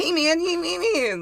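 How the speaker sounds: very high-pitched, slow, dragged-out cartoonish voice. Mocking how characters in a weird movie sounded: cartoonish voice. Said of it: "they literally made them sound so fucking cartoonish".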